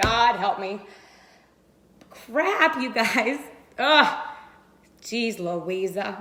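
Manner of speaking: choking up, emotional voice catching. Starting to share a personal story with viewers, getting emotional. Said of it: "I'm already getting emotional".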